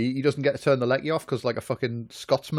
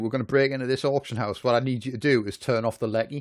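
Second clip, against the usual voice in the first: usual speaking voice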